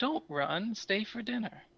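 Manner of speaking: soft, slow, high half-whisper that carries far. Voicing a sharp-toothed creature calling to fleeing players: soft, almost half-whispering. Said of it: "almost whispering".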